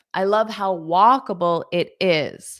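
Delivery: plain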